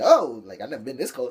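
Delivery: put-on sarcastic wrestling-villain voice. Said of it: "Stephanie like".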